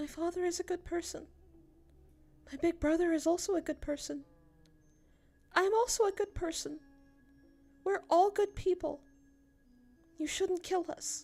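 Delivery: put-on small, tiny, very high little girl's voice. A narrator reads a young girl held in her nanny's arms, in a tiny voice. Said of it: "said in a tiny voice".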